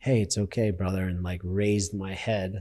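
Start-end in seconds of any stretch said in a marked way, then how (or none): 0.0-1.0 mock soft, little, angelic sweet voice. Retelling a voice heard with head in the bucket: imitating a little angelic voice. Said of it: "the same little, like, angelic voice is like".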